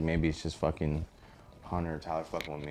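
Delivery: normal talking voice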